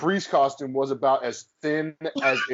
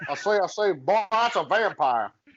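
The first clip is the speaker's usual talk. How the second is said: southern dialect voice, pitched much higher; 5 semitones higher than usual. Co-hosts feed [name] lines to perform, Foghorn Leghorn voice. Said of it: "feeding [name] Foghorn Leghorn lines".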